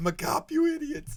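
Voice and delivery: very high, loud, slow, squeaky tough-guy voice. Trying out changing voices, does a squeaky Arnold Schwarzenegger voice. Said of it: "That's the squeakiest Arnold Schwarzenegger ever".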